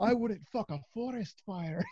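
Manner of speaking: clumsy put-on Scottish accent. Retelling Ross Gardner's bit about GIs, in a bad Scottish accent. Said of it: "my bad Scottish accent".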